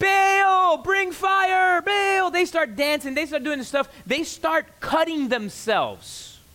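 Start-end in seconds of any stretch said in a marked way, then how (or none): 0.0-2.3 very slow, high shout with "Baal" drawn out. Retelling the prophets of baal calling for fire: imitating prophets shouting. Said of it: "they begin to shout".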